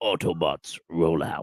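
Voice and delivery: very deep announcer voice, dropped low and announcing. Quoting the robot leader's rally call: Optimus Prime voice. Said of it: "That's quite a good Optimus Prime impression there".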